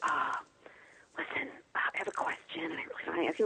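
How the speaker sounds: acted whispering. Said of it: ""Why are we whispering?"".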